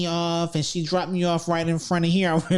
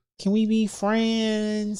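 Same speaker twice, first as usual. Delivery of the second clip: mock drunk woman's speech, higher; 4 semitones higher than usual. Retelling how a woman came up to the table: imitating a drunk woman. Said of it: "drunk as fuck".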